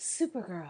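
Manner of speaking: hushed, soft, breathy, barely voiced whisper. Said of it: "you quietly whisper".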